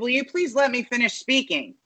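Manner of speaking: put-on authoritative tone. Recounting a man's retort to CNN hosts on air; mock-authoritative tone. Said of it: "in a very authoritative tone".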